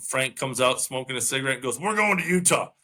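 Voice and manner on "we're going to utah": grumpy man's voice, grudging and put-upon. Retelling how a smoking golfer overruled his caddy: imitating a grumpy man. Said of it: "He's an angry fella. Like, grumpy, not angry. Grumpy".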